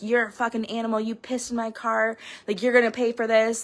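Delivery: put-on mean, nasty tone. Retelling a text sent afterwards: retelling a mean message. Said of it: "really mean".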